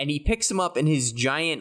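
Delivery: plain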